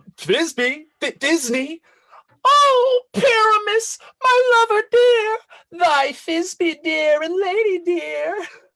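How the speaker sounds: loud, tiny, high-pitched squeezed falsetto. A player asks to take the Thisbe part too, in a monstrous little Thisbe voice. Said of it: "I'll speak in a monstrous little voice".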